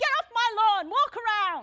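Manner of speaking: shrill, very loud, high-pitched yell. Retelling an old man yelling at a teenager cutting across his lawn: imitating someone yelling. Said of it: "he yells at Larry".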